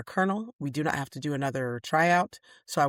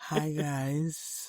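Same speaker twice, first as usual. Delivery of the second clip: raspy, hoarse voice, quieter; 5 dB quieter than usual. Greeting the audience when asked to use the raspy voice: raspy voice. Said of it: "You're a little too raspy".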